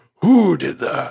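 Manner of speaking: play-acted big, booming, commanding voice. Teacher asking the room who did that, in a booming voice of God. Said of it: "With my voice of God".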